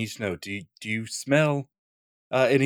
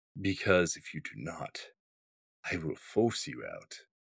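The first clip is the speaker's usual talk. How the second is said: intimidating, menacing hushed whisper; 4 semitones lower, 8 dB quieter than usual. In a roleplay, a character warns trespassers to leave its domain, intimidating. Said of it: "you've just tried to intimidate it".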